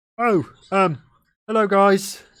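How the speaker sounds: very high, slow, drawn-out, loud troll voice. Voicing a troll-like being who hears the players arrive: troll character voice. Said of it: "hears you guys coming down and goes".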